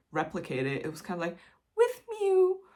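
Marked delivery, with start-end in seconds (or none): 1.7-2.5 very high-pitched, eerie, creepy voice. Recalling what the phone said while half asleep, imitating a high-pitched creepy voice. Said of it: "in this really high pitched, strange, creepy voice".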